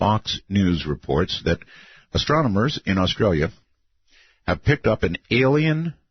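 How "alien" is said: alien strongly leaned on. Reading a news story to the audience, stressing the word alien. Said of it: "notice how I emphasized alien".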